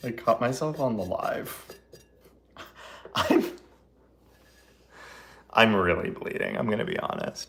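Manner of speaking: talking while laughing throughout. Admitting to bleeding from a cut just made, laughing while talking. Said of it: "I don't know why I'm laughing".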